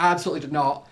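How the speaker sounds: ordinary delivery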